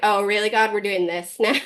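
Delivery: slightly sarcastic tone. Acting out own words to god on bad days: retelling a sarcastic remark. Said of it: "can be kinda sarcastic with my faith".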